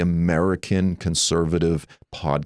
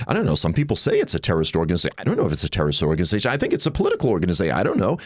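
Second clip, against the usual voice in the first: noncommittal, hedging pundit voice. Quoting what Tucker Carlson actually said, in a Tucker Carlson impression. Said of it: "that was my Tucker impersonation".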